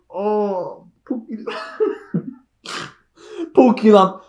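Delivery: words broken up, drawn out by laughing to tears. Reacting to a scene with the phrase pookie lump: laughing hard while talking. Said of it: "I'm crying".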